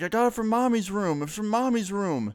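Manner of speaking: put-on very high, sobbing, wailing six-year-old child voice. Retelling the boy's answer when asked where he got it, imitating a screaming, crying kid. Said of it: "he starts screaming and crying".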